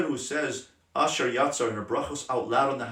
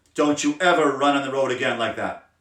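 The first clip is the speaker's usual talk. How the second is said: loud, raised-voice scolding. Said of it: "Level three is".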